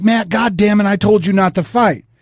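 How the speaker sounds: full-on, high-pitched, yelled scolding. Retelling yelling at someone caught fighting at a party: retelling own past yelling. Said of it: "I start yelling at him".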